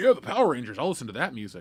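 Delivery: normal talking voice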